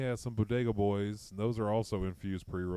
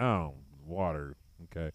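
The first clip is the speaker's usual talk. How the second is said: disappointed, let-down reply; 5 semitones lower than usual. Retelling how a server answered an order of water: imitating a disappointed waitress. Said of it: "dead eyes".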